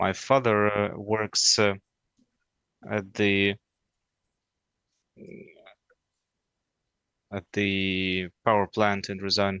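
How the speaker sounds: hesitant, nervous, halting, stumbling over words. Answering a question about what their father does: nervous, halting. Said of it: "I'm nervous".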